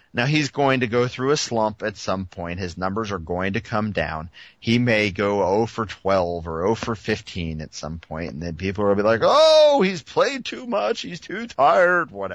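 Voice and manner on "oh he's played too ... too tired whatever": very high, shrill crazy-person voice. Mimicking what people will say later, in a crazy person voice. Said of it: "doing my crazy person voice".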